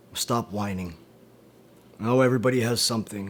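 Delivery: normal talking voice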